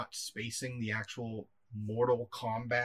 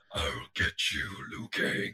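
slow, forced, throat-straining put-on voice; 2 semitones lower than usual. Attempting a voice that hurts the speaker's throat: throat-straining put-on voice. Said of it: "I was just going to attempt to do the voice".

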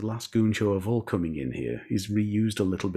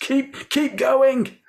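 high-pitched shouting; 8 dB louder than usual. Recounting how Spike shouted during a fluffed performance, retelling a shout. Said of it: "Spike shouts".

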